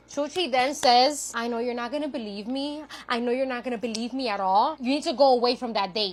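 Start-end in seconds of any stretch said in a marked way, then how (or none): 1.4-6.2 put-on weird speaking manner, quieter. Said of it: "Chuchi's talks like that".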